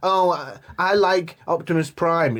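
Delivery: very slow, teasing, mocking drawl. Mocking what the other speaker was going to say: imitating the other speaker. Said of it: "all he was gonna say is".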